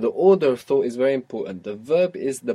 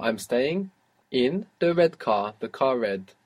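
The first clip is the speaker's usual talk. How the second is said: ordinary talk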